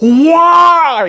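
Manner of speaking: high, loud, anguished yell like a dying horse. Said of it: "yells and says".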